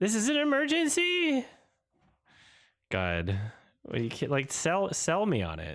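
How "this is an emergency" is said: play-acted, very high, sarcastic mocking parody. Reacting to a trailer and mocking an actress's line: mocking imitation of an unconvincing line. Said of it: "she really sounds like it's an emergency".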